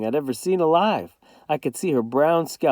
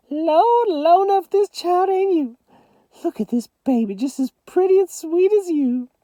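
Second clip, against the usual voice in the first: very high, little squeaky voice; 4 dB louder than usual. Narrator reads Grandma Sands speaking to Mama, in her little squeaky voice. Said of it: "got her little squeaky voice back".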